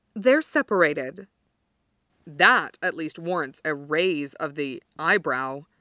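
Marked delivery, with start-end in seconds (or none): 0.2-1.3 flat, deadpan delivery. A woman answering a man's point about someone on deck, speaking flatly. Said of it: "she says flatly".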